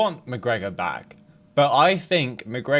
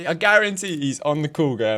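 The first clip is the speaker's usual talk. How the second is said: normal talking voice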